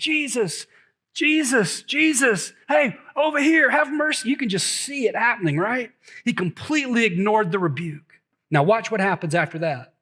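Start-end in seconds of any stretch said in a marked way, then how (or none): 0.0-4.3 acted-out desperate, frantic, high, drawn-out crying out. Retelling a man calling to jesus after being rebuked: acting out a frantic plea. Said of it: "he just started going crazy".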